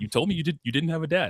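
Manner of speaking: put-on angry, riled-up outburst, high and pissed-off. Retelling a character getting pissed at Malevolent: mock-pissed-off. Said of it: "she gets all pissed at Malevolent".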